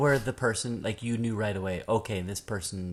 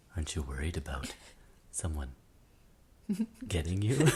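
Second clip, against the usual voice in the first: unsettling, creepy, swooping sing-song voice; 4 semitones lower, 5 dB quieter than usual. Mimicking people who ask the speaker about safety, mock-creepy voice. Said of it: "Such a creepy way, too, like in that voice".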